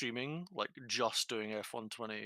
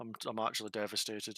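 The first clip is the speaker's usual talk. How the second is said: plain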